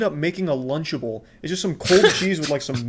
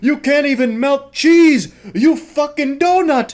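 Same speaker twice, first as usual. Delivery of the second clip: mock booming, very loud, drawn-out furious chef yell; 8 semitones higher, 8 dB louder than usual. Imagining Gordon Ramsay raging at the dish: imitating Gordon Ramsay yelling. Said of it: "he'd flip a table".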